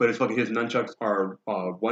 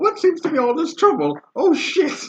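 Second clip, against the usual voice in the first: put-on very high, very loud, shrill, swooping old lady voice; 8 dB louder than usual. Voicing an older lady stepping out to see the trouble: older lady voice. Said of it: "another older lady comes out, and she's like".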